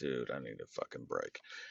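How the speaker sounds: exhausted groan. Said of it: "was just like".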